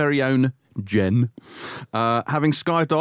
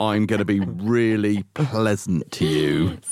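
low, slow, menacing and sinister delivery; 6 semitones lower than usual. Repeating the co-host's line back to her: imitating a sinister, threatening tone. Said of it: "in a kind of really sinister, threatening way".

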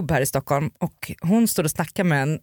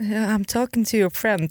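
put-on frightened voice, higher; 5 semitones higher than usual. Retelling how a man at a club answered: imitating a scared reply. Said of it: "han blev så rädd och bara tittade på mig".

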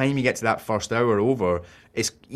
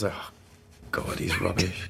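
mock under-the-breath mutter, quieter and slower; 4 semitones lower, 8 dB quieter than usual. Retelling what she says watching their son throw a football, retelling an under-the-breath mutter. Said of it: "She just says it so under her breath".

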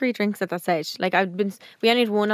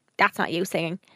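ordinary talk

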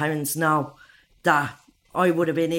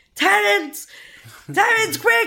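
re-enacted scream, much higher, louder; 5 dB louder than usual. Speaker recalls her waters breaking at night, retelling a scream. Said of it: "I'm screaming".

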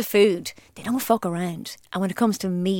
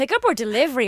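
high-pitched, half-sarcastic tone; 5 semitones higher than usual. Imitating a nearby restaurant answering the phone, retelling an almost sarcastic tone. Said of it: "almost sarcastically".

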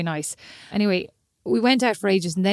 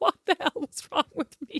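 put-on tearful, hushed, breathy sobbing whisper; 8 semitones higher, 5 dB quieter than usual. Recounting being left on a street, re-enacting their own past bawling. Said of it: "I'm like bawling, crying".

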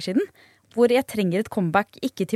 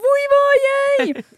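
high, loud sobbing, screaming wail; 6 dB louder than usual. Retelling how he grew frustrated and finally broke down; imitating crying and screaming. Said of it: "begynte han å gråte og skrek bare sånn".

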